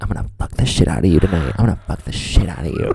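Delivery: hushed, secret whisper, very close. Retelling what a guy kept saying in their ear: imitating a whisper. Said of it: "whisper in my ear".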